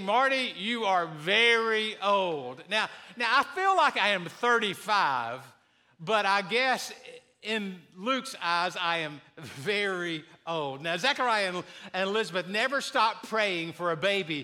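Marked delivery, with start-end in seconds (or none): 0.0-2.7 drawn-out scripture-reading voice. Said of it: "the Bible is saying".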